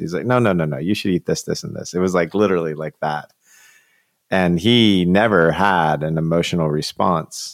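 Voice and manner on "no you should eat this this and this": mock-domineering, bossy woman's voice. Speaker retells how a woman spoke to a Marine: imitating a domineering woman. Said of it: "She was so domineering".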